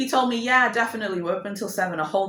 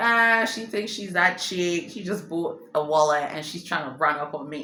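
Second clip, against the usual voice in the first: normal talking voice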